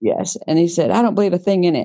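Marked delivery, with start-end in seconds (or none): 0.9-1.9 blustering, boisterous, high, emphatic man's voice. Retelling what he said after tossing the book on the table, imitating his boisterous voice. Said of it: "he's got his boistery voice".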